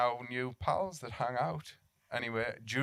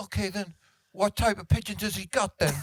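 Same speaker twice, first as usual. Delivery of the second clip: high, loud, squeaky voice with heavy lisp; 8 semitones higher, 7 dB louder than usual. Retelling a conversation about pigeons, asked to do it: Mike Tyson voice. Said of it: "that is spot on".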